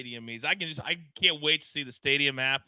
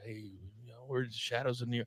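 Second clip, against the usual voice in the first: mock-dramatic voiceover, much quieter; 4 semitones lower, 12 dB quieter than usual. Asking someone why they narrate dramatically while making it, mock-dramatic voiceover. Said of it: "why do you talk like you're getting all dramatic".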